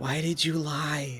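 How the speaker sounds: whispered, in put-on character. Leaning toward a party member while walking, whispering in character.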